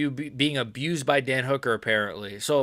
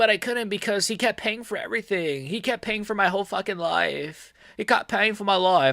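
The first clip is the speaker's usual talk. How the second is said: poor put-on New Zealand accent, pitched up; 6 semitones higher than usual. Telling a story about a man who paid for everything, in a bad new zealand accent. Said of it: "this accent's killing me right now".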